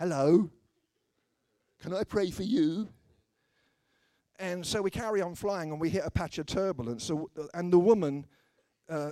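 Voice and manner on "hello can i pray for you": loud, cheesy delivery. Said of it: "it sounds like a pickup line".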